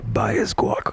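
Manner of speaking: secret, whispered aside. Acting out a line to a cashier behind someone in line: acting out a whisper. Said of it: "I will whisper to the lady".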